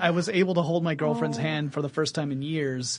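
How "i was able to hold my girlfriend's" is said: plain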